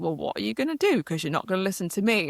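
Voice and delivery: fast, sassy, cheeky voice. Recounting a pivotal decision, giving the mind a mock-sassy inner voice. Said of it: "this really sassy voice moment".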